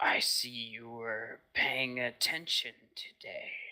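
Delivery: gritty, gravelly voice of the undead. Game master voicing an undead voice heard during a player's meditation, in a gravelly undead voice. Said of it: "this ever gravelly undead voice".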